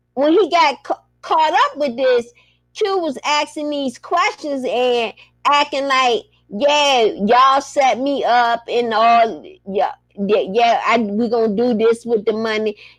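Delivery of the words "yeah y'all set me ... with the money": ordinary talk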